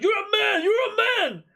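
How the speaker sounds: acted, accusing, very high, shrill shriek.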